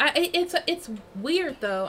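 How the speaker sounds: stuttering. Speaker reflecting on people needing to grieve and let go, stuttering. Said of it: "I'm stuttering".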